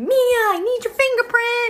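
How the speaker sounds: screaming high and slow. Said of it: "runs into her classroom screaming".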